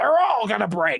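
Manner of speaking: high-pitched, annoyed, angry delivery. Retelling how he said it to friends, imitating an angry tone. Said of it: "he said it more angrily".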